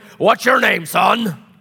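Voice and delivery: looming grown-up's booming voice, loud and high. Showing how some adults loom over a new little kid, big booming voice. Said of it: "like big booming voice".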